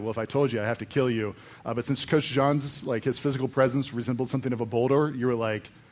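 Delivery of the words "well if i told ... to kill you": ordinary talk, nothing marked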